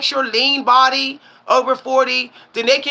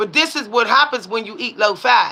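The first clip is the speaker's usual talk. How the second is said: normal talking voice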